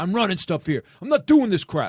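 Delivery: mock indignant, angry ranting outburst. Describing how male actors get angry, imitating an angry actor. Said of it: "What men usually go anger".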